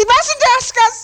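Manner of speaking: very high, shrill, wailing shriek. Narrator reading Gollum's reply to Bilbo's question, Gollum shrieking. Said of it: "shrieked Gollum".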